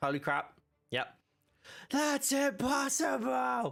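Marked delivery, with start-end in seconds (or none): 1.9-3.7 put-on London soap-opera character voice. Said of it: "you just made Luke sound like an EastEnders character".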